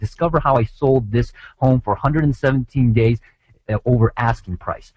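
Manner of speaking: normal talking voice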